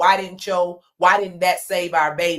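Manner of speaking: ordinary delivery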